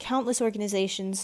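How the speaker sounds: plain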